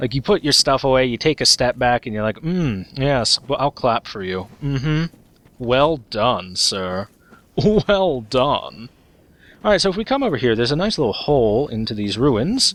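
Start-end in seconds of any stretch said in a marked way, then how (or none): 2.4-8.9 slow, put-on, sarcastic polite praise. Voicing the game character's clapping gesture: mock sarcastic praise. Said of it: "it looks so sarcastic".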